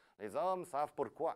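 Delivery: poor put-on Belgian French accent. Quoting a belgian beer slogan, in a bad belgian accent. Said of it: "Très mauvais mon accent belge ce soir".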